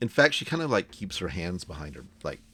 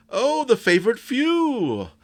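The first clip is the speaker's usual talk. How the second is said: high, slow, loud, grand headmaster-style voice. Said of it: "And they say".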